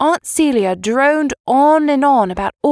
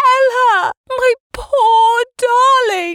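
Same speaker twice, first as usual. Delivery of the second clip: very high, very slow, drawn-out shrill screech; 11 semitones higher than usual. Narrator voices Aunt Celia racing across the lawn, screeching. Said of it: "screeched Aunt Celia".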